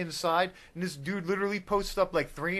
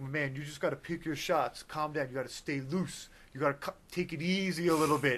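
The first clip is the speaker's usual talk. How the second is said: put-on older man voice, quieter; 3 semitones lower, 5 dB quieter than usual. Retelling what happened during a workout, imitating an older man.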